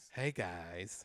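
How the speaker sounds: put-on campy seventies voice.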